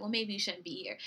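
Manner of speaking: ordinary talk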